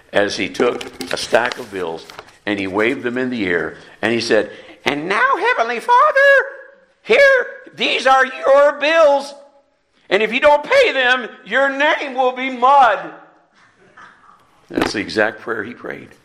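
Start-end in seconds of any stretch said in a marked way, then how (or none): 4.8-13.1 very high, loud, squeaky swooping voice. Retelling a man's prayer as he waves a stack of bills, squeaky voice. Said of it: "overheard his squeaky voice".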